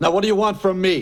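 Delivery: demanding yell. Answering a phone call, demanding what the caller wants: shouting. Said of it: "Don't shout".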